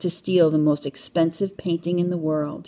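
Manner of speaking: ordinary delivery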